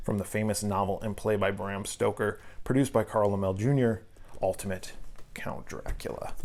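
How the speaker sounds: ordinary talk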